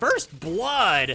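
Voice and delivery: thrilled, excited cry with the voice cracking. Casting a match as a team takes first blood, voice cracking with excitement. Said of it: "my voice crack will give away".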